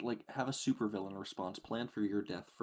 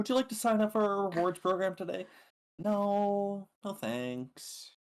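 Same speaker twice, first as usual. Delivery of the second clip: put-on thick drawn-out LA accent, higher and louder; 11 semitones higher, 8 dB louder than usual. Imitating a friend talking at a retail store: imitating a thick LA accent, drawn out. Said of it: "this really thick L A accent where every word she says is really drawn out".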